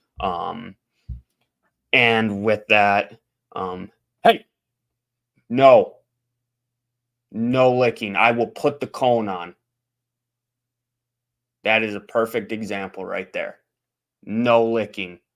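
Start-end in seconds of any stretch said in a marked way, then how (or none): 4.2-15.1 abrupt, sudden, loud yell. Speaker suddenly breaking off to tell him to stop licking, yelling. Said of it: "sorry for yelling all of a sudden".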